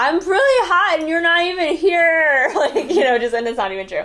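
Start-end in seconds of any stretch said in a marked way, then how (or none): 0.0-2.5 high, loud, stretched-out shout, drawn out long. Recalling a funny line once yelled at him: retelling a yell. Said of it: "I yelled something funny at him".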